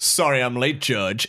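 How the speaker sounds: put-on smarmy defense lawyer voice. Retelling a courtroom scene, voicing a late defense lawyer: imitating a smarmy lawyer. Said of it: "This smarmy".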